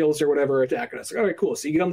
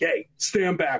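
mocking, rude, bossy guard voice. Retelling how the guards in line behaved: acting out rude guards. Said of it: "they're all just being, like, dicks".

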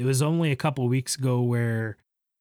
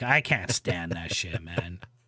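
ordinary talk, nothing marked

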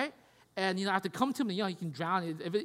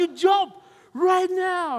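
very slow, high, drawn-out screaming; 10 semitones higher, 10 dB louder than usual. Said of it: "screaming out there".

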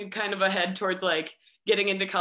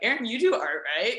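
mock half-joking tone, higher; 2 semitones higher than usual. Recounting his brother's question at dinner: retelling a half-joking question. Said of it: "my brother somewhat jokingly is like".

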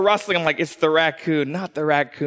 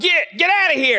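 put-on shout, higher; 11 semitones higher, 3 dB louder than usual. Retelling chasing off a raccoon with a rake: retelling a yell. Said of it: "I'm yelling at him".

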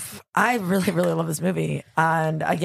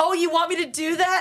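acted, very high-pitched, sassy sarcastic tone; 12 semitones higher than usual. Quoting a favorite character's line from the movie: imitating Tomei being sarcastic. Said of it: "she's so, like, sarcastic about it".

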